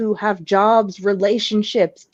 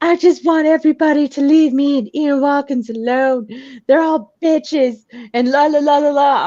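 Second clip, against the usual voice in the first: play-acted, tearful outburst, words spoken through crying; 4 semitones higher than usual. Retelling what she said to the speaker while crying: imitating someone crying. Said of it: "she actually did a thing with me where she's crying".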